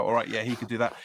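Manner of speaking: ordinary talk, nothing marked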